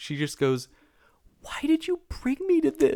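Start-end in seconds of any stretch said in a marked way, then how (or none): 1.4-3.0 saddest, very high, little sad voice. Recounting what a girl said to her, imitating someone's saddest voice. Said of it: "in the saddest voice".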